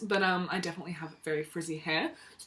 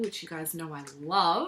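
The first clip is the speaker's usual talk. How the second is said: sarcastic, clearly not meaning it. Showing viewers a little sachet in the box: sarcastic tone. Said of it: "Being sarcastic there".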